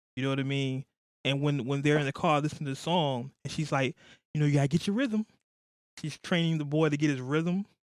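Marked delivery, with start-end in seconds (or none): 4.4-5.3 mimicked proper-sounding speech, higher. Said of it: "they're talking with a proper accent".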